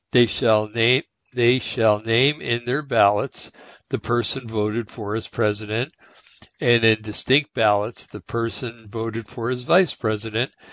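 slow, careful reading pausing at every comma. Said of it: "I'll try to read it a little slowly".

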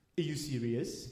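put-on French accent, deep, very low and very soft. Retelling how a man ignored the speaker and turned to Thorno, in a French accent. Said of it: "That's a really good French accent".

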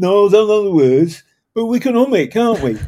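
exaggerated bad Brummie accent. Retelling a man's answer about knowing the Marseillaise words, bad Brummy accent. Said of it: "I'm going to do a bad Brummy accent".

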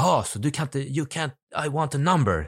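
put-on insistent, worked-up tone, high and slow. Retelling a man pressing TikTok for a number, imitating an agitated questioner. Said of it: "alltså lugna ner dig liksom".

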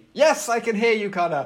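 loud shout, pitched high, yelled. [name] answers Connor, who keeps calling his name, shouting. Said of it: "no need to shout".

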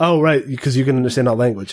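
ordinary delivery

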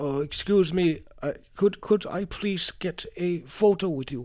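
put-on polite elderly German man voice. Retelling how an elderly German man asked for a photo: imitating an elderly German man. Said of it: "there's this elderly German man".

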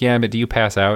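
chuckling, amused, half-laughing delivery. Speaker quoting the dentist's reply about passing out, retelling the dentist laughing. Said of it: "the dentist kind of laughs".

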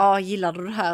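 plain

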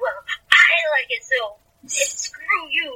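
very high, drawn-out angry tone. Imitating a character snapping back at criticism: imitating Jo mad and angry. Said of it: "getting all mad and angry".

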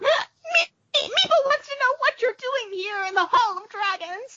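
very high, tiny, squeaky voice. Storyteller voicing the creature the players find in the Hall of Dragons: little Meepo voice. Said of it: "you hear a little voice go".

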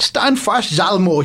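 put-on, attempted Swedish accent. Narrating a match, quoting a Swedish defender's shout: attempted Swedish accent. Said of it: "I'm not sure if I can do a Swedish accent".

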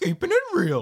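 high cartoon dog voice. Delivering the punchline of a Scooby-Doo joke, Scooby impression. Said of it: "how do you do that impersonation?".

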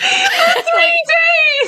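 high, loud laughing shout.

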